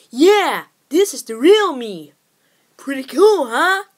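loud cartoon hedgehog character voice. Speaker tries the voice again for listeners: Sonic voice. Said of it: "I actually approve of that Sonic voice".

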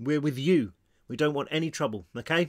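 ordinary delivery

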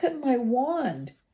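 trembling, unsteady, shaky, high-pitched voice. Narrator reading Ron's line after he hit the windscreen, in a shaky voice. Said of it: "said Ron in a shaky voice".

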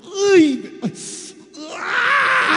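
high, loud, pained yelp.

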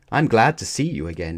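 plain

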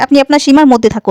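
normal talking voice

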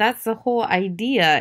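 plain

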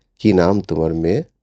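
usual speaking voice

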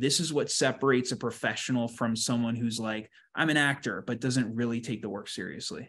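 plain

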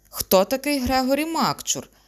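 shrill, high, loud, desperate outcry. A lost young man clutching his head cries out in despair. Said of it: "розпачливо вигукнув він".

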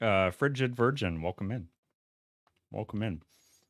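talking with mouth full. Speaker welcoming a new follower while eating, talking with mouth full. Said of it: "I got nasty beans in my mouth".

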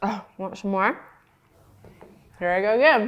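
talking with mouth full. Speaker reviewing a food while eating it, talking with mouth full. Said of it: "Talking with my mouth full".

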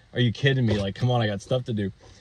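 ordinary delivery

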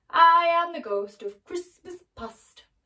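very loud, thundering, booming spirit or giant voice. Reading a story, the giant spirit announces himself to Scrooge in a booming voice. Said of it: "he boomed".

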